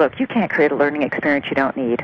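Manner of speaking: normal talking voice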